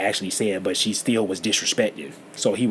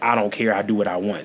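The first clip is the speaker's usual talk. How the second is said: ordinary talk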